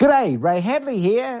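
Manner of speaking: very high-pitched, squeaky put-on voice. Imitating how Ray Hadley introduces himself: Ray Hadley voice. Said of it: "Like high pitched voice".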